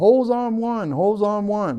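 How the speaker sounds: high, drawn-out yell. Retelling fighting a fire when the applicator stopped: retelling a yell. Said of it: "and then I was yelling".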